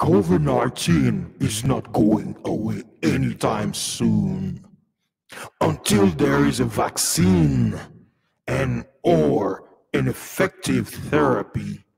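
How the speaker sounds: rough, creaky, villainous evil voice. Reading a news article aloud to viewers, in an evil voice. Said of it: "Let me read it in my evil voice".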